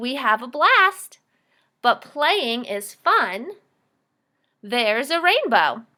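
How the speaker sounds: lively, excited, slow reading voice, rising on "rainbow". Teaching how to read aloud, excited voice rising at the end. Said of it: "I didn't yell, but my voice definitely went up at the end".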